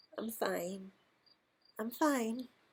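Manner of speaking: tiny, small, soft murmuring voice. Held in her arms after being freed, he answers her question in a tiny murmur. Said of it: "murmured Conn in a tiny voice".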